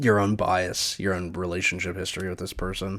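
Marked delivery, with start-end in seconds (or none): none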